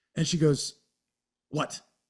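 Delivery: ordinary talk, nothing marked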